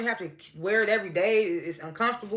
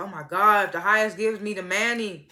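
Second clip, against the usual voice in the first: put-on, full-throated screaming outburst. Retelling a show scene where a character is screaming: imitating someone screaming. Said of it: "Zane steady screaming".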